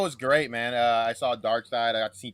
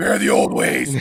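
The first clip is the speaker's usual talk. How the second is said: put-on commanding voice, lower and louder; 8 semitones lower, 10 dB louder than usual. Imitating the commanding voice someone does as Darkseid: commanding Darkseid voice. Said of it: "it's commanding".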